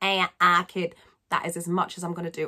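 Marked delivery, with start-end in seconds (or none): 0.0-0.9 raised, twangy Manchester accent, twang on "ah". Describing friends from the Salford area and trying their sound: attempted Manchester accent. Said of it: "I cannot do a Manchester accent, but it's that kind of ah sound".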